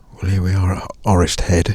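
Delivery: whispering. Arriving at Orist Head with other people nearby, whispering. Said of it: "I'm whispering because there are other people up here".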